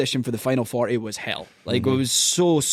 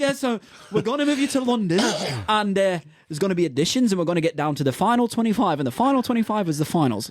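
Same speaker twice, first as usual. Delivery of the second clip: spot-on put-on English accent, pitched up; 6 semitones higher than usual. Retelling what the organisers told him: imitating an english accent. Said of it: "Your English accent is fucking spot on".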